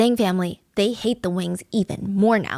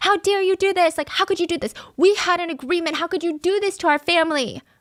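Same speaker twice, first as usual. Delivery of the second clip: put-on high, enraged, furious screaming tirade; 9 semitones higher than usual. Retelling a story, acting out a furious neighbor: imitating someone screaming. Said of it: "she would scream at them".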